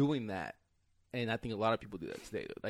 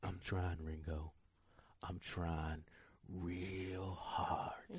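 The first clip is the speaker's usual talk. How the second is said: low, very slow, lingering drawn-out "real"; 4 semitones lower, 8 dB quieter than usual. Quoting a favorite film line the way Jules delivers it: Jules impression. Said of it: "I love the way he delivers it. He's like".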